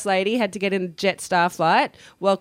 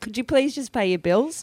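ordinary delivery

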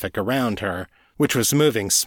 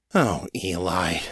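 groaned, groaning through the words; 3 semitones lower than usual. [name] reacts to Eli purring in the back seat, groaning. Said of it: "[name] groaned".

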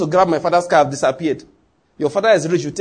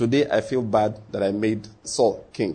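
slow, flat, toneless mock monotone; 8 semitones lower, 6 dB quieter than usual. Retelling a Bible story, speaking God's words; God speaking in a flat tone. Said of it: "God will say with a flat tone".

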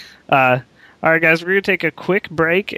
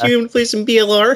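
put-on nerdy voice, higher; 9 semitones higher than usual. Imitating a bearded friend after he shaves, as a total nerd. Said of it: "I bet Jared sounds like a total nerd".

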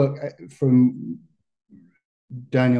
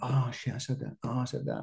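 soft, hushed, dawning realization, as if to oneself.

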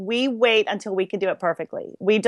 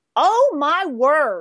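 put-on deep Southern accent, pitched up; 6 semitones higher, 3 dB louder than usual. A woman opens the door on a noisy house full of music: deep Southern accent. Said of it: "She's like deep Southern".

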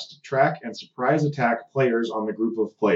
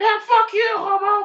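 put-on very high, loud, drawn-out, jeering kid's taunting voice; 5 dB louder than usual. Imitating a twelve-year-old player taunting online: imitating a trash-talking kid. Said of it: "twelve-year-old kid playing as the Predator being like".

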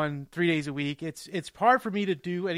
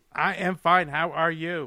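playful mock robotic voice. Answering how are you, joking around: playful robot voice. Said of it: "Why are we talking like robots?".

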